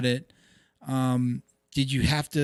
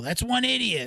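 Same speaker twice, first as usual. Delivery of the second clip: put-on old man voice, higher; 9 semitones higher than usual.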